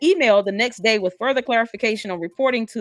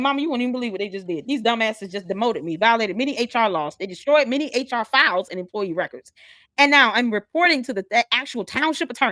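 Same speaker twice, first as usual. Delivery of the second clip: usual speaking voice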